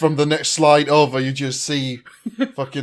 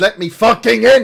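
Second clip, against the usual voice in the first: loud, raised, mock angry barking voice; 8 semitones higher, 8 dB louder than usual. Imagining yourself at the gates of hell, demanding the doorman let you in, mock barking. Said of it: "just barking at the fucking doorman going".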